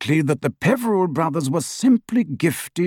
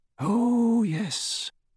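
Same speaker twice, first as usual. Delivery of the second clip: faint, soft and pitched up; 6 semitones higher, 6 dB quieter than usual. Prompted about giving up the search for the Hallows, he answers faintly. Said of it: "said Dumbledore faintly".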